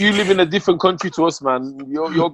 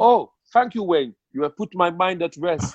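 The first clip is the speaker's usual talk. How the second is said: terrible fake German accent. Imagining how a friend would answer after watching the clip, terrible german accent. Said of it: "that was a terrible german accent".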